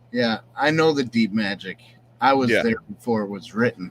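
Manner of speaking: ordinary talk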